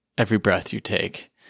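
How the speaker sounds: ordinary talk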